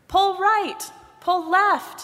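shouting at very high pitch. In the river, Head shouts directions to Arms. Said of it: "Head shouted to Arms".

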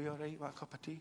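soft, gentle, hushed voice.

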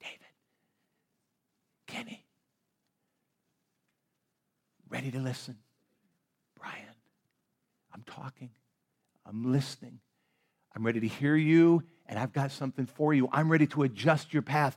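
quiet whisper. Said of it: "when God whispers to us, just whisper".

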